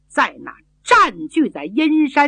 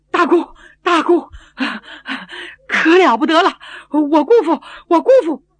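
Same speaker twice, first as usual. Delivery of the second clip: out of breath, panting, gasping; 6 semitones higher, 4 dB louder than usual. Storyteller voicing a man who bursts in and runs to the inner room, out of breath. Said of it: "气喘吁吁".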